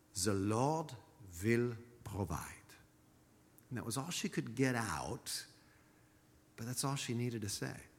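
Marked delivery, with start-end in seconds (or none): 0.3-2.4 put-on English with a Swiss accent. Quoting a woman who turned to the speaker with advice, in her Swiss accent. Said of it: "in her Swiss accent".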